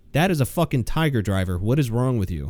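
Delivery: mock deadpan delivery.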